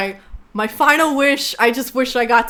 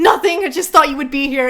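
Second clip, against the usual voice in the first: panicked, alarmed voice; 4 semitones higher than usual. Retelling a movie scene where a mother speaks on the phone: imitating a panicked mother. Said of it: "panicked on the phone".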